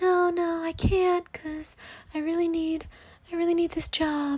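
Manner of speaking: quiet, very high-pitched voice. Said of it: "my best impression".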